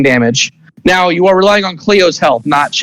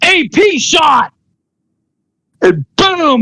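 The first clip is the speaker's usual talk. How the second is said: shrill, very high-pitched, explosive war yell; 11 semitones higher than usual. As the villain blocking the way, a character fires off an attack, shouting an explosive battle cry. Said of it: "And you see like his hand starts to glow like that, and he jumps up in the air, and he goes to shoot at both of you. / So [name] goes, / So he's blocking the way to your brother. / why are you yelling".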